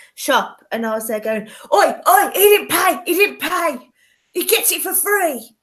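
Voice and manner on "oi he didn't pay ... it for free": put-on high, rowdy drunken shouting. Retelling being drunk in a shop, acting out own drunken shouting. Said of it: "I just kept shouting like random shit".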